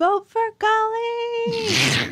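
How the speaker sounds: screaming at top of lungs, high and slow. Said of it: "I just scream at the top of my lungs".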